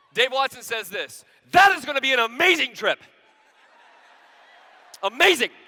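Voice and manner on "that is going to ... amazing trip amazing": very loud, angry, high-pitched yell. Speaker acts out how another man yelled a line at him, retelling a shout.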